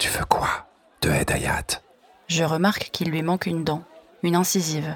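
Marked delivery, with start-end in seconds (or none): 0.0-1.8 hushed, secretive whisper, barely audible. A man leans toward the narrator's shoulder to reply: said very quietly. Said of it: "dit tout bas".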